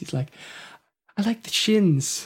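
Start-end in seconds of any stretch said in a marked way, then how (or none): 1.2-2.3 small, very quiet voice, high and slow. Describing how Sean Murray talks, the speaker imitates his very quiet little voice. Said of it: "he's got this like very quiet little voice".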